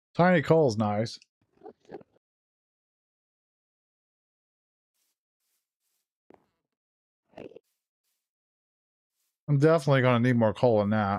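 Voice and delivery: talking with mouth full while eating. Speaker eating a cinnamon roll while talking, with mouth full. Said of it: "I'm talking with a mouthful".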